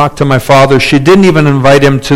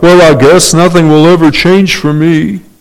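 mopey, hopeless-sounding cartoon donkey voice; 3 semitones higher than usual. A speaker illustrates a defeatist mentality, Eeyore voice. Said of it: "I can't do a good ear voice".

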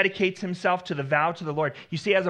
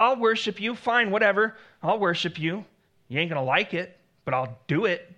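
mock stubborn, obstinate tone. Explaining what Jonah is not saying, imitating an obstinate voice. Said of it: "That obstinate voice that says".

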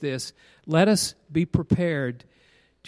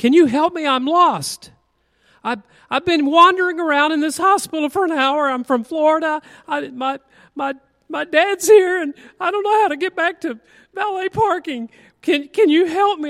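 put-on tearful, distressed woman's voice, much higher, louder; 11 semitones higher, 7 dB louder than usual. Retelling a lost woman in a hospital asking for help, mimicking a lady near tears. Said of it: "kind of on the verge of tears, and it kind of went like this".

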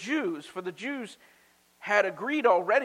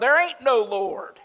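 furious, loud, angry yelled shout; 3 semitones higher, 6 dB louder than usual. Telling a story about a woman's atheist neighbour, imitating an angry shout. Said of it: "he would get so angry at her proclamation, he'd shout".

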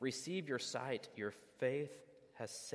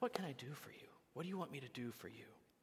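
very polite, courteous voice; 3 semitones higher, 6 dB quieter than usual. Acting out Jesus asking the blind man what he wants: Mister Rogers voice. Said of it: "kinda like Mister Rogers Jesus, just so polite".

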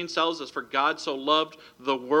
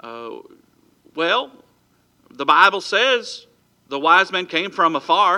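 put-on heavy East Texas country accent; 5 semitones higher, 6 dB louder than usual. Speaker retells a boy's answer to the principal, in a heavy East Texas accent. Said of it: "in his heavy East Texas accent".

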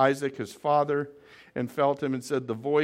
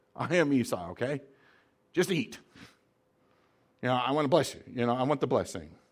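mock impatient, hurrying voice. Retelling a son speaking to his father Isaac, acting out impatience. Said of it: "I can almost hear the impatience in his voice".

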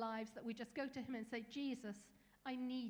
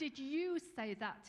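loud, hissed, demanding tone; 5 dB louder than usual. A burglar questions a parrot he has just found; hissed. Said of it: "he hissed at the parrot".

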